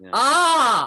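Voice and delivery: loud, hard glottal attack on ah. Explaining how we push our cords into motion: hard glottal attack on 'ah'. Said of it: "we hear this hard ah attack on the cords".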